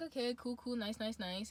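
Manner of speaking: normal talking voice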